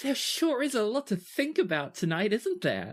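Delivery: bright, bubbly, very high chirping voice. A woman speaks from the tent flap in a high, bubbly voice. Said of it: "a high, bubbly voice that says".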